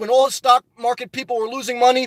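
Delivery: ordinary talk, nothing marked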